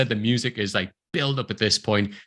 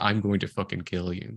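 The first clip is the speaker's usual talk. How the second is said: dry movie-style delivery, much lower and quieter; 4 semitones lower, 4 dB quieter than usual. Describing a film scene to a co-host, quoting Uma Thurman's very dry delivery. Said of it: "just saying things very dry, very straight".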